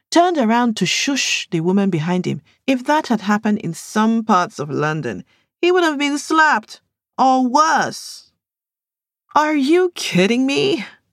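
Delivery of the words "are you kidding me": high-pitched scornful scoffing. A mother answers another woman's question about her children, scoffing. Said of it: "Latoya scoffed".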